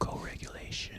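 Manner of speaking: soft, unvoiced whisper close to the mic.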